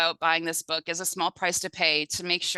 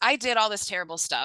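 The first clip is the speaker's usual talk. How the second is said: ordinary talk, nothing marked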